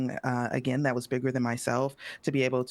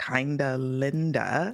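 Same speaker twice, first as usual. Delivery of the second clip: said slowly, at a slow pace. Naming who put the panel topic together: said slowly. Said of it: "I'm gonna say it slowly".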